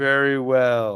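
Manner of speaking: disembodied moan. Narrating an adventure, a voice answers the heroes' refusal, moaning. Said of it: "moans the voice".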